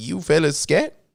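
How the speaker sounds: rising, questioning intonation. Imitating how another person says his line: imitating his line as a question. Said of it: "it's like the question".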